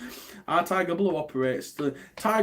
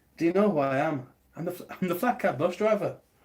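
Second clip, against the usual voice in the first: bad, crude, put-on Irish accent; 3 semitones higher than usual. Starting a bit after being asked not to, doing a crap put-on irish accent. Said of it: "Your Irish accent".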